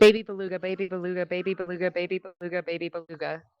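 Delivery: rapid-fire repetition. Challenged to say baby beluga five times fast: very fast tongue twister. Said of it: "say "baby beluga" 5 times fast".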